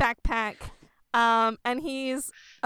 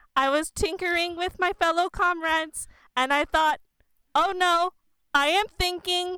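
pitched-up, higher little robot construct voice; 6 semitones higher than usual. A player introduces their character, speaking as Boxface: Boxface character voice. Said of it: "[name] is a half construct who is a kind of robot with a like a fleshy mouth".

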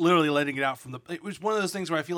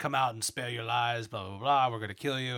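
put-on weird, creepy digitized voice, lower; 4 semitones lower, 3 dB quieter than usual. Retelling a scene where Jedi hear an enemy call out: imitating a weird creepy digitized voice. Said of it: "weird, creepy digitized voice saying".

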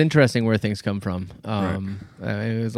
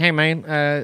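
bad hammy put-on voice, hesitant and drawled; 5 semitones higher than usual. Retelling an old joke radio commercial: terrible George Bush impersonation.

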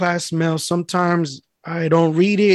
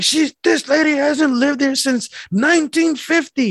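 very high-pitched, indignant, angry griping; 9 semitones higher than usual. Retelling an old lady complaining about mail: imitating an angry old lady. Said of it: "she would just get hella mad".

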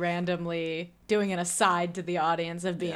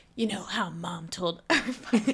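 put-on brooding character voice. Retelling a film scene, imitating Mickey Rourke's character. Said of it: "why are you doing this voice for".

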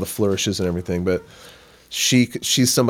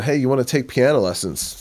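offhand, casual called-out voice, pitched up; 5 semitones higher than usual. Retelling the dad calling down an offer of lessons: imitating a casual yell. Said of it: "My dad yells down".

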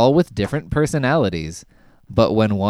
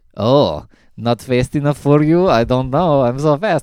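put-on Eastern European accent; 4 semitones higher, 4 dB louder than usual. Describing the fast character from Avengers: Age of Ultron: Quicksilver's Eastern European accent. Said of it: "he's got an accent".

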